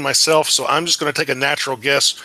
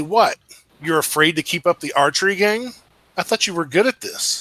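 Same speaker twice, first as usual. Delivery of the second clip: loud stage whisper; 2 semitones higher than usual. Calling out to a hidden archer while hiding behind trees: loud whisper. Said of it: "in a loud whisper and say".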